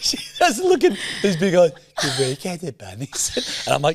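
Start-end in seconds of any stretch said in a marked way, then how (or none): 2.0-3.7 put-on baby voice, quieter and slower. Retelling how she asked during a meeting, imitating her baby voice. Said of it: "maybe save the baby voice".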